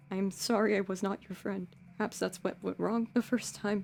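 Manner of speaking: muttered under the breath. Narrator voicing a tall character who hugs the player, muttering very quietly. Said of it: "he just sort of mutters".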